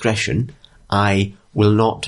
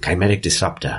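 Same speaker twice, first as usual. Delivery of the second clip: soft, hushed half-whisper; 3 semitones lower than usual. A storyteller voices a figure who half-whispers a name to the listeners, half-whispering. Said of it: "And he whispers to you".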